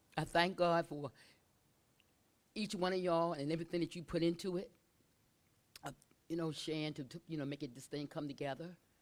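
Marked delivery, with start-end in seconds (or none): 0.2-4.7 very loud, tearful, choking up, near tears. Thanking everyone for what they put into it, about to cry. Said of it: "I'm about to cry".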